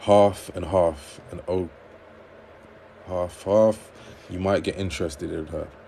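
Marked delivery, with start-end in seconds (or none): none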